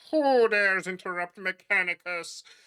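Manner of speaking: voice as if over radio. Describing a figure straightening up, voicing it as a muffled radio-transmission voice. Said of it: "you hear this voice that is kind of like muffled, almost sounds like a radio transmission".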